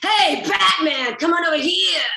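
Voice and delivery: very loud, hostile, aggressive, off-putting tone. Speaker demonstrating the wrong intention when calling Batman over: repellent aggressive tone. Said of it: "that's more of a repellent, aggressive tone".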